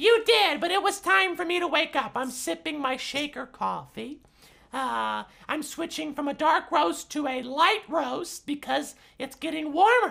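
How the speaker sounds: very high talking puppet character voice. Answering a morning greeting as the woken-up shakers: voicing the talking shakers. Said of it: "Hello, shakers".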